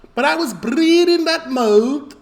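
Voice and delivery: Liverpool accent, pitched very high. Repeating a line after a TV clip: Scouse accent.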